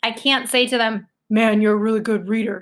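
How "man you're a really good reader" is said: insincere, unfriendly, grumpy, grudging tone. Showing how not to compliment someone: insincere, not a nice tone. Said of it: "She sounds grumpy".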